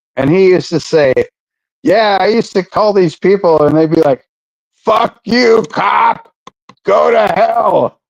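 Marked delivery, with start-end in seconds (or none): 4.8-7.9 very slow, drawn-out, rough, creaky angry voice. Retelling how people answered a cop's calls, imitating angry callers. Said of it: "I can't believe they're so pissed off".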